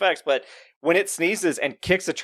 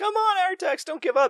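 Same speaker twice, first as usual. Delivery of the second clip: scream, higher pitch. Retelling a movie scene where the boy yells at his horse: imitating someone screaming. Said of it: "Trey is screaming".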